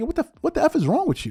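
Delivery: blunt, trash-talking jab. Retelling an All-Star game moment, imitating Kobe Bryant trash-talking. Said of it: "This is Kobe Bryant talking like".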